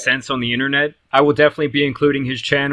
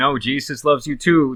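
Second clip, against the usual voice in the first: plain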